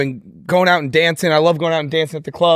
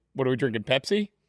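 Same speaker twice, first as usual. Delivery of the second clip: put-on Midwestern American accent; 8 dB quieter than usual. Pitching a sketch, acting out a walk-in line: midwestern accent. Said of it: "like a Midwestern accent".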